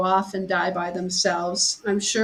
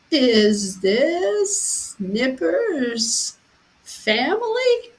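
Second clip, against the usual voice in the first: put-on very frail old man's voice, high, swooping; 5 semitones higher than usual. Retelling a phone call from a 93-year-old man: imitating a frail old man. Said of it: "he said in a very frail voice".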